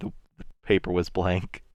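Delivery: hushed, soft whisper. Whispering into another character's ear in a game scene: whispering in character. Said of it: "whisper into his ear".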